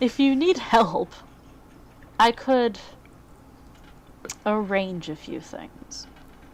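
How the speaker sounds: helpful-sounding tone with a veiled, vaguely threatening edge. A character offers the party help getting past the gate guards, vaguely threatening. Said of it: "Somehow that sounded threatening".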